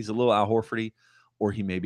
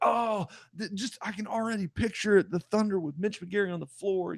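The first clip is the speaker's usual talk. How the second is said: very high voice, done badly; 10 semitones higher than usual. Imitating Bill Simmons on draft night praising the pick: terrible Bill Simmons impression. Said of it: "That's a terrible impression of Bill Simmons".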